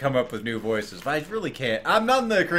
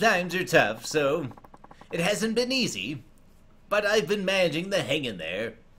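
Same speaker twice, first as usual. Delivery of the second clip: nerdy voice, higher; 3 semitones higher than usual. Playing a customer handing over this month's payment, nerdy voice. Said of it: "I'll just make him sound like a nerd".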